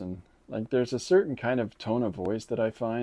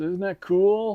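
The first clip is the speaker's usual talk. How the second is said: put-on sarcastic voice, higher and louder; 9 semitones higher, 6 dB louder than usual. Imitating a channel host commenting on terrible things: imitating Ray Casagrande's sarcasm. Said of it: "he always has this really sarcastic".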